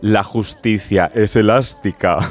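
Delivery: low, utterly wicked, pure evil villain voice. Quoting a character's line from the series Herederos: Concha Velasco's villain voice. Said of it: "con voz de muy mala, malísima".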